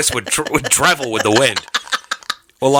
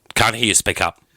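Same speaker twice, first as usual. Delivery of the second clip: ordinary delivery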